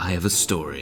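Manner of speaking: normal talking voice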